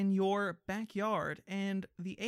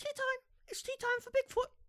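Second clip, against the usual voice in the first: put-on tiny, very high British voice. Describing Bigfoot walking right up, then speaking as him in a small British Bigfoot voice. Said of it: "I'm British now because I'm small".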